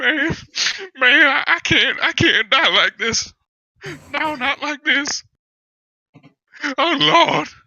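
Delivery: very high, loud, tearful, sobbing, drawn-out voice. Voicing a captive who fears death, acted crying. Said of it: "He noticeably starts crying".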